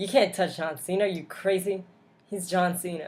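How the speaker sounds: sarcastic tone. Talking about a wrestler who kicked John Cena: sarcastic tone. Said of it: "I'm saying that sarcastically".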